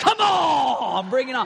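loud, slow, angry, final "on" stretched. Retelling how a younger brother confronted a bigger kid: imitating someone mad. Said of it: "He was mad".

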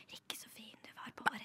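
hushed whisper. Showing how a whisper sounds to someone trying to concentrate in a library, whispering. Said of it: "Men hvis jeg hadde hvisket deg".

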